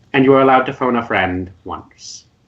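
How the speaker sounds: ordinary talk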